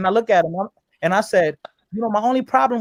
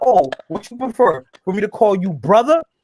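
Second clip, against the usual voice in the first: dripping sarcasm, mock-polite and snide. Retelling what the other guy said in an argument: imitating a sarcastic tone. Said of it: "Now he's trying to be sarcastic".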